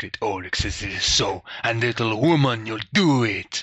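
put-on agitated character voice. Voicing Great Auric, who orders the others to stay: agitated Great Auric voice. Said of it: "seems to get quite agitated".

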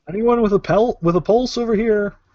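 loud hollering, calling-out shout. Calling out to find anyone alive nearby: shouting. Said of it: "Are you shouting?".

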